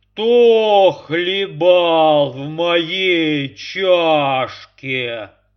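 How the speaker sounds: fearsome, very loud, slow, booming bear roar. Reading a fairy tale, the big bear looks into his cup, roaring in a terrible voice. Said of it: "заревел страшным голосом".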